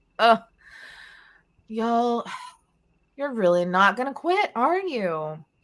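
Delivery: smug, cocky jeer with a laugh. Narrating a game fight, voicing an attacker taunting after its hit: cocky laughing taunt. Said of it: "a very cocky kind of laugh".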